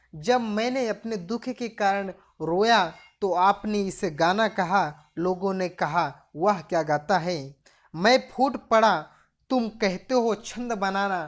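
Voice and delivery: ordinary talk, nothing marked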